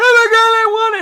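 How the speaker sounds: put-on shrill, very high, loud wailing child scream. Retelling how a mom's kid freaked out, imitating a child screaming. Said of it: "And he was like screaming something".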